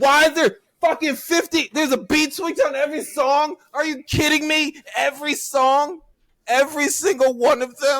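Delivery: very high, shrill, full-on ranting yell. Speaker ranting about a record, yelling. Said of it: "Now I'm yelling and I can't go back".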